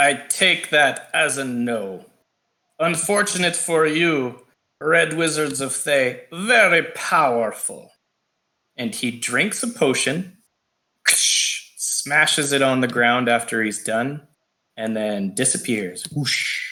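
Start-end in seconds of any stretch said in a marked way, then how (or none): 0.0-7.9 loose put-on Slavic accent. A game master voicing a Red Wizard who confronts the players, sort of a Slavic accent. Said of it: "with sort of a Slavic accent".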